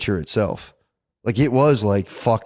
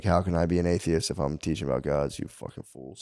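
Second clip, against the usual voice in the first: fed-up, scornful, exasperated and indignant tone; 5 semitones lower, 9 dB quieter than usual. Retelling the trial of Socrates: imitating Socrates, exasperated. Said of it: "And he was like".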